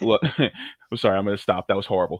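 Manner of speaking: plain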